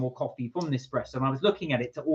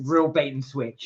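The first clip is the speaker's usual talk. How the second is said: usual speaking voice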